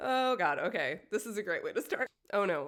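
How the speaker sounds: tearful, teary voice, half-crying. Reacting after remembering a loved one who died: crying a little. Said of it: "crying a little and, like, wiping my tears away".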